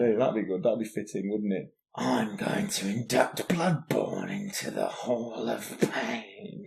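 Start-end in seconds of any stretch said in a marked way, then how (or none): 1.9-6.7 slow, drawn-out, creaky, rasping voice with swooping pitch. Inducting a game into a hall of fame: Mikolash voice. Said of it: "I'll do it in Mikolash's voice".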